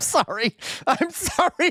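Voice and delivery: very high, loud, giggling speech through laughter. Apologizing while failing to hold in laughter: laughing while talking. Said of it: "I shouldn't laugh".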